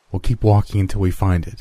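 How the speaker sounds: ordinary delivery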